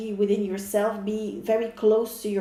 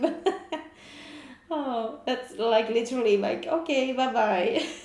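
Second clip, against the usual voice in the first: talking through bursts of laughter; 2 semitones higher than usual. Reacting to the butterfly put in the river, laughing while talking. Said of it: "sorry, I'm laughing".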